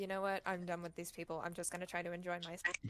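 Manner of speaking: normal talking voice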